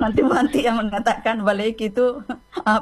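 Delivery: high-pitched, laughing while speaking.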